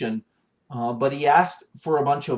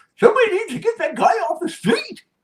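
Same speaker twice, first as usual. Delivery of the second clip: loud, very high-pitched put-on old man voice; 5 dB louder than usual. Showing voices done for a video, an old man voice. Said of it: "I was like the old man".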